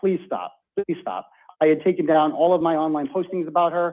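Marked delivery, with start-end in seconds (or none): 0.0-1.3 put-on play-acted pleading through tears, childlike, crying. Retelling a phone call to the woman they feared, retelling tearful begging. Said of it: "crying like a child, begging her".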